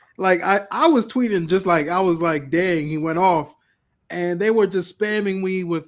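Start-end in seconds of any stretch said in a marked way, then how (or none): none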